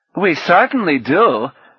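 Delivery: abrupt, loud, high cutting in, barging over. A man cuts in on someone addressing the group, interrupting loudly. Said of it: "interrupted loudly".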